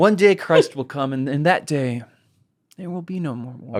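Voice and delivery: theatrical, put-on longing, yearning delivery. Redoing a line as a performance after being teased: put-on longing. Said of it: "Should I try the performance again?".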